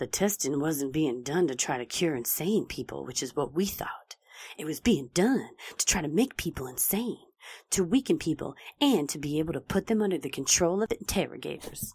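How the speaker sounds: soft, put-on beat poet reading delivery. A narrator quoting Kesey's account of the experiment: beat poet voice. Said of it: "That's my beat poet voice".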